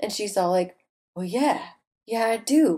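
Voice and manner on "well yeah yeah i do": seductive, sexy, sultry film-star purr. Retelling a movie scene, quoting the character: sexy Demi Moore voice. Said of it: "sexy Demi Moore voice".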